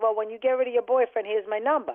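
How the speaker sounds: ordinary delivery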